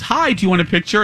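ordinary delivery

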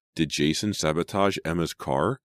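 ordinary talk

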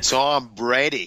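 bad, put-on Boston accent attempt. Speaker tries again after his accent is mocked, in a bad Boston accent. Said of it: "There it is".

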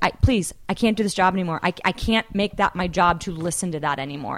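put-on tearful, crying voice. Retelling how she begged her partner to quit the job, imitating her own crying plea. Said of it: "I started crying".

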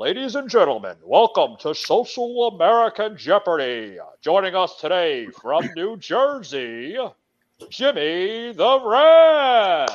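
booming, swooping game show announcer, "rant" stretched. Doing a comic show voiceover to introduce guest Jimmy, Jeopardy announcer voice. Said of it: "my game show voice in".

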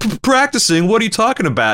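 put-on whiny, sniveling, swooping American accent, very high pitch. Describing a villain mocking another character by switching voices, sniveling American accent. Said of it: "sniveling American accent and goes".

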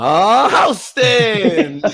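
high, very slow, loud drawn-out call. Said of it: "Red Dog, like, every city we're in".

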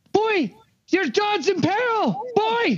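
very slow, drawn-out shout. Calling out to a fleeing figure in the game: yelling in character. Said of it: "I yell".

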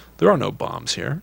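ordinary talk

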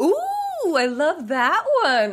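high, slow, delighted cooing.

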